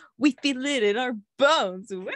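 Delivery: high, loud, cartoonish put-on voice. Quoting a funny Facebook post to friends: cartoonish voice. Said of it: "sorry if I sounded cartoonish when I said it".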